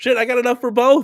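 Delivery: high-pitched, loud, excited exclaiming. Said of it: "getting rid of the deluxe is like".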